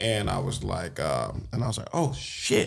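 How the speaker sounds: ordinary delivery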